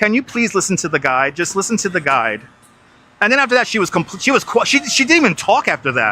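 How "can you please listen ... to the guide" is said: play-acted very calm, composed, stern, no-nonsense tone. Retelling how a guy told a tour guest to listen: imitating a calm, stern voice. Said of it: "in a very calm, stern voice".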